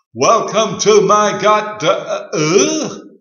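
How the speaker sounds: very loud, very slow, high-pitched delivery. Narrating a story, repeating a reply to an imagined visitor: loud voice. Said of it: "for there before me was this human-looking person, only a metre tall, leaning on what looked like a golden spade sparkling in the sunlight. And all around him were these amazing colours of the rainbow".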